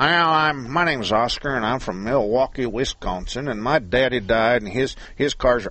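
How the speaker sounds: put-on Texas accent. Acting out a car seller answering a buyer's call, in a put-on Texas accent. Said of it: "I'm doing a Texas accent for the Milwaukee guy".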